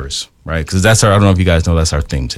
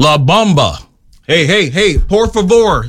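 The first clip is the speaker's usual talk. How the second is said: put-on Texan accent, very high-pitched; 11 semitones higher than usual. Showing how they said it, like a texan: texan accent. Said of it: "I was saying it more like a Texan".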